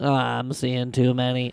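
bad impression, low, slow drawl. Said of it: "Sounds like Ned from South Park".

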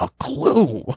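very high-pitched cartoon dog voice. Retelling what Scooby says in the cartoon: Scooby voice. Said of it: "then Scooby goes".

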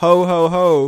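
festive, classic Christmas ho-ho-ho voice. Playing Santa Claus in an improvised bit, in a Santa Claus voice. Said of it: "I am Santa Claus".

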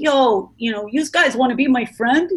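imitated New Jersey accent. Recalling moving from New Jersey to California as a kid, put-on New Jersey accent. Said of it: "And from New Jersey to California, it was like".

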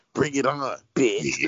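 overdone, forced fake-tough talk, trying too hard. Imitating how a wrestler sounds when she talks tough, forced tone. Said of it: "she just sounds like".

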